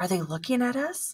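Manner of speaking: breathless, short of air, with rising pitch. [name] asks Denise, once they are away from the soldiers, breathlessly. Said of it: "[name] asked breathlessly".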